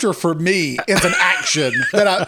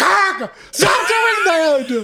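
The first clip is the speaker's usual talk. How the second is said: put-on yell, much higher; 11 semitones higher than usual. Speaker acts out their mom yelling at them during a grandfather's funeral, retelling a yell. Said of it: "She's yelling".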